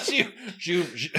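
high-pitched, laughing too hard to speak.

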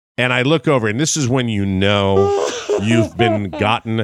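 ordinary talk

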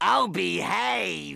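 rough, creaky, rasping voice. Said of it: "impersonating movie characters".

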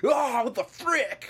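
very high, loud, nasty guttural screech. Speaker recounts a woman fully committing to a weird scream, imitating a guttural nasty scream. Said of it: "nasty voice where she's like".

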